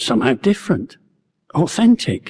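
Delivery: ordinary delivery, nothing marked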